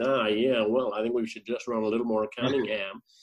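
low, put-on American accent. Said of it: "he claims he's from America now".

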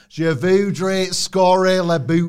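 Scarborough English accent. Saying a French sentence as it would sound: Scarborough accent. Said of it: "it would be like in a Scarborough accent".

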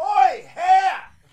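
high, loud shout, yelling. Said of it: "she just leaned in and went".

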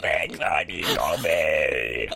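low, slow possessed demon growl.

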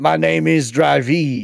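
very slow speech in a put-on French accent. Voicing a French-sounding nemesis character: put-on French accent. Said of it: "does he sound like this?".

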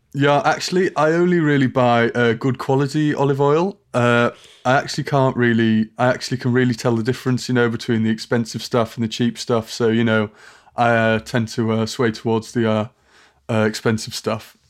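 ordinary delivery

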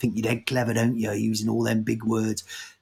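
jeering, mocking tone like a playground taunt. Retelling what people from Nottingham used to say: imitating mocking people from Nottingham. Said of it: "the people I grew up with in Nottingham who used to all be like".

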